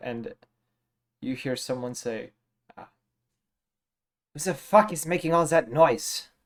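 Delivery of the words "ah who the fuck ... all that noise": irritated creature voice, angry grumbling to itself. Narrating a tunnel scene, voice someone down the tunnel angrily speaking to itself. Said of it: "angrily speaking to itself".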